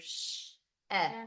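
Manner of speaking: sh held long and slow, ed set apart. Showing learners how to read a word, sounding out a word slowly. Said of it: "So if I sound this out".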